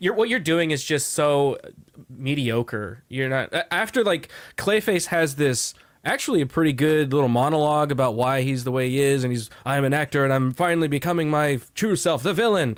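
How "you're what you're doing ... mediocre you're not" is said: plain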